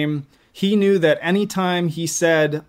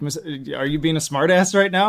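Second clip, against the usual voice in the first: ordinary talk, nothing marked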